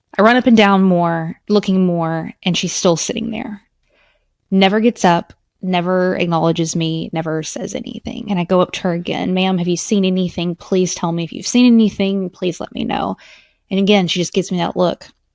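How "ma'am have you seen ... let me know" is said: put-on hysterical crying, desperate pleading tone. Retelling begging a seated woman to say if she saw anything, retelling crying, desperate pleading. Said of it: "I am just hysterically crying".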